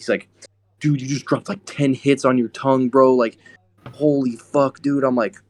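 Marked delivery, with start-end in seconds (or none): 0.8-5.0 put-on high, freaked-out, panicking rant. Retelling how a friend reacted to a dropper mistake: imitating someone panicking. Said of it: "then he starts freaking panicking".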